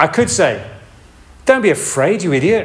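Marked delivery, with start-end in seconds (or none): 1.5-2.7 patronizing, condescending tone, pitched up. Demonstrating the wrong tone of voice to use, in a condescending voice. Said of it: "condescending kind of your stupid kind of voice".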